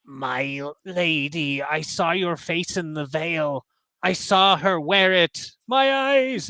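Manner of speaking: cracked, broken voice, very drawn-out words. A game narrator voices a returning man addressing the player: cracked, slow voice. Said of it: "his voice is cracked and slow".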